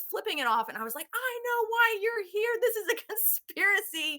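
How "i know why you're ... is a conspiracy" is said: play-acted, very high, accusing, disturbed screaming. Retelling getting out of the car to face a helicopter: retelling screaming at a helicopter. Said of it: "I was screaming at it".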